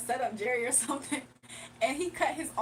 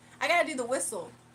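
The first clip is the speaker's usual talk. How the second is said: plain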